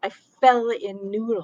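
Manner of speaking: loud, slow, angry blurt. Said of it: "and in a loud voice".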